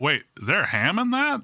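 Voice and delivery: high, drawn-out Midwestern voice. Imitating a Midwestern customer asking about a drink: imitating a Midwesterner. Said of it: "the lack of Midwesterners going through there like".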